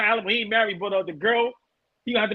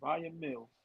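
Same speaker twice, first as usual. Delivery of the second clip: very quiet, soft, hushed half-whisper; 7 semitones lower, 15 dB quieter than usual. Saying a name quietly in case the show gets flagged: half-whispering a name. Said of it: "Let me whisper it again".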